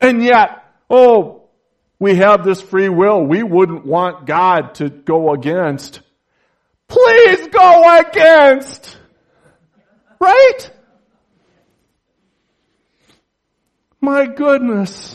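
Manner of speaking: very loud, worked-up, swooping preaching exclamation. Preaching to listeners about God and free will, getting lathered up. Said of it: "I'm getting a little lathered up here".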